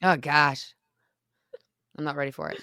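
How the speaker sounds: rasping voice. Talking with another speaker about all your medications, in a raspy voice. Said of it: "I kind of almost sound like my grandma. She had quite the raspy voice".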